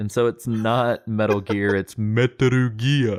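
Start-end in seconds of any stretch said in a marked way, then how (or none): 1.7-3.2 deep broadcast announcer voice. Showing how he says japanese words, in a deep tv announcer voice. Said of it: "I go into like T V announcer voice".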